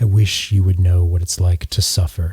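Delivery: low, sullen mutter. Voicing a character speaking to a cheerful friend at a bar: muttering under his breath. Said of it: "under his breath".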